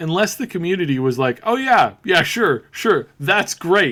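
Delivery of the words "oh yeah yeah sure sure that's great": loud, swooping, dripping sarcastic approval. Imitating the community reacting to a new Sonic: imitating sarcastic praise. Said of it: "its sarcasm just wasn't".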